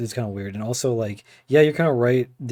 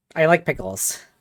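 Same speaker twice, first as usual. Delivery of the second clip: goofy, silly put-on voice, pitched up; 5 semitones higher than usual. Mid-conversation, slipping one line into a silly funny voice. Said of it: "I threw a funny voice in".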